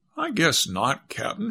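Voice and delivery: calm, composed, untroubled, collected tone. Answering a frightened companion as the mermaids come near, a character replies calmly. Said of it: "she answered calmly".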